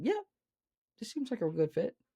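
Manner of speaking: mock very high, swooping, polite but unconvinced. Describing how people answer a pitch, imitating a polite, unsold yes. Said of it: "the first one, was a polite yes, but I am not sold. I am concerned".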